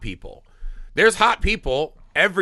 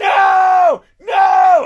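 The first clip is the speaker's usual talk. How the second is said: mock yelling, much higher and louder; 10 dB louder than usual. Speaker recalls yelling at the TV as Lestat makes his choice, retelling yelling at the TV. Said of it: "I was like yelling at my T".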